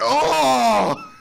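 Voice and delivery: high, loud, disappointed crowd groan.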